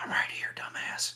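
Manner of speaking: soft, breathy, barely voiced whisper. From a shadow beside a man waving his hands, speaking to him; whisper. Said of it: "I'll whisper".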